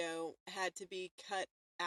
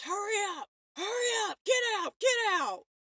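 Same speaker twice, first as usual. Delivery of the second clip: loud, shrieked screaming, pitched way up; 12 semitones higher, 7 dB louder than usual. Retelling how a scare actor came out at them: imitating a screaming scare actor. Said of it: "just starts screaming at us".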